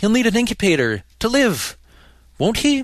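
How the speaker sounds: very high, out-of-breath panting. A narrator reads a woman's line in a story, panting. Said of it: "she panted".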